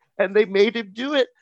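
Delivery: acted, high voice squeezed out while crying laughing. Retelling a TikTok woman losing it at the punchline: imitating someone crying with laughter. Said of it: "She starts laughing so hard she's crying".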